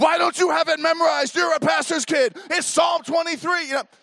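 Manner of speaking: very high-pitched, loud screaming. Retelling how they yelled at the pastor's kid, re-enact the yell. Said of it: "and I start yelling at her".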